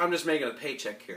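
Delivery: normal talking voice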